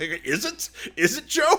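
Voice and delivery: high, laughing mock disbelief. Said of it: "I was like".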